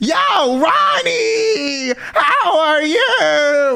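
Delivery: high voice breaking over and over, very slow, drawn out. Describing how some people talk to their friends, the speaker imitates voice cracks. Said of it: "their voice cracks like eight times".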